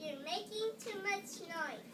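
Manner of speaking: high, harsh, scolding-toned evil queen voice.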